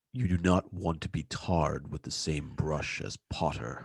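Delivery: dark, deep, menacing, sinister voice. Trying the voice a co-speaker asked for on a character's line: deep, sinister voice. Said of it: "I want to hear deep, sinister".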